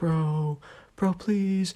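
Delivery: small, high, soft, secretive half-whisper. Quoting someone pleading with the subscriber during a test, in a little half-whisper. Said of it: "Kind of like in a little whisper voice".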